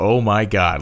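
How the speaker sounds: put-on stunned, disbelieving burst of relief. Retelling the driver's reaction when the light comes on: imitating an incredulous exclamation. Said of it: "both a incredulous".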